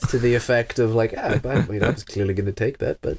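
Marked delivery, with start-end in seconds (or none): 1.2-3.2 barely audible, grumbling mumble under the breath. Acting out grumbling about losing a turn: pretend muttering under breath. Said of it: "mutter something very inaudible under my breath".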